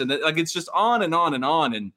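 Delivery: ordinary talk, nothing marked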